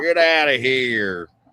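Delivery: put-on Southern guy voice. Doing a stereotype of a Southern guy: mock Southern guy accent. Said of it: "Southern guy stereotypes".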